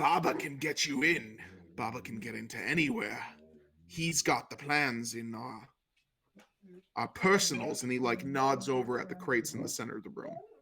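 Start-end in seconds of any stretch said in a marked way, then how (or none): 0.0-7.8 sinister, menacing tone. Voicing Cornelius, who smiles at the visitor and greets him: sinister. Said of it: "smiles this really sinister smile and he goes".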